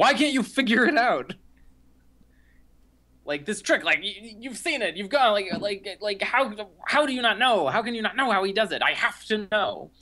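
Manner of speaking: high-pitched mock scream. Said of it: "he's screaming at".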